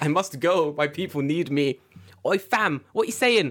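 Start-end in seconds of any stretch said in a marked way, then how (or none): 2.3-3.5 put-on London street accent, higher, faster. Joking about a man squatting in full Adidas, put-on London street accent. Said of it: "What accent is that?".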